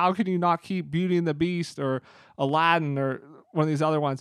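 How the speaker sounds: normal talking voice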